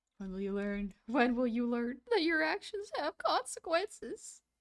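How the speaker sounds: put-on kid's voice cracking mid-line. While drawing, speaker mimics a kid's line: kid's cracking voice. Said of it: "I love that kid's voice crack".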